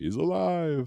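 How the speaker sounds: very high-pitched voice in horror-movie style. Answering a chat greeting that he is alive: Frankenstein voice. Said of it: "You gotta say it in that Frankenstein voice".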